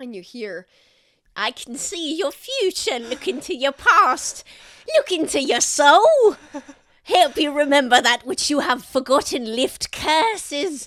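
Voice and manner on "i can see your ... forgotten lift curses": loud, piercing, carrying voice. Narrator voicing someone calling out as you bustle past, voice cutting through the crowd. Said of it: "a voice kind of like cuts through everything".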